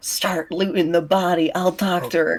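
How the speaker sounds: hushed, half-whispered voice. As a game character answering an ally beside a body, half-whispering back. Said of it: "Holly will like whisper back".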